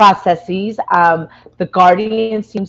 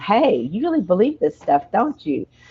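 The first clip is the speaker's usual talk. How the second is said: soft, hushed, confiding half-whisper, said aside; 6 dB quieter than usual. Retelling a line half-whispered on a film set: half-whispering. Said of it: "George kinda whispers to him".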